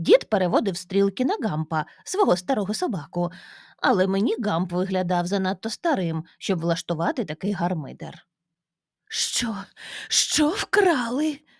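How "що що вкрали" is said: breathless, gasping, whispered voice. A mother reacts to news of a theft at the grandfather's house; gasping. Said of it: "Задихалася мама".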